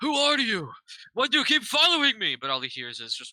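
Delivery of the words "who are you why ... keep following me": very high, loud calling-out yell. Yelling through the glass at a glowing figure: yelling in character. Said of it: "I'm gonna yell out".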